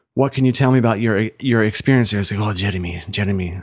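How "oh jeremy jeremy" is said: put-on Lebanese-accented voice. Retelling what Terry told him about Georgia, imitating Terry in a Lebanese accent. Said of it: "I don't know why I'm using a Lebanese accent".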